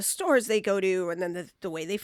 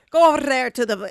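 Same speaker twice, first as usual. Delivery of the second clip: put-on strong Scottish accent, rolled r's, higher, louder; 4 semitones higher, 8 dB louder than usual. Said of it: "they'll roll their R's".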